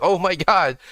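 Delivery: exaggerated put-on surprise. Already knowing the story, imagining pretending otherwise: exaggerated put-on surprise. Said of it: "I'm gonna act surprised like".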